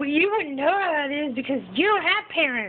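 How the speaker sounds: acted furious, angry delivery with pitch pushed up. Complaining about a Harry Potter movie scene where Ron gets angry, acting out angry Ron. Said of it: "when Ron gets angry and he's all like".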